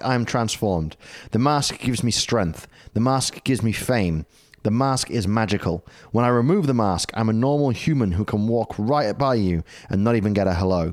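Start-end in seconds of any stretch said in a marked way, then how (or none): none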